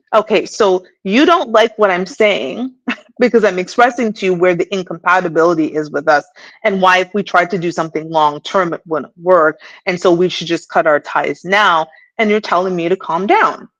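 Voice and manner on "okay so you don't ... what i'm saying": ordinary delivery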